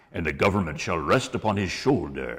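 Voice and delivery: put-on booming prophet voice. Showing the voice used for Isaiah in a pageant: Charlton Heston as Moses voice. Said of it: "ripping off Charlton Heston as old Moses".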